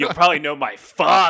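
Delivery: very loud, high, scornful, disdainful delivery. Imitating a character introducing his father: imitating someone saying it with disdain. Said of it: "the way that he says it with, like, disdain".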